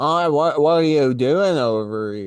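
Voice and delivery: put-on nasal Boston accent. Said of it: "kinda Boston accent".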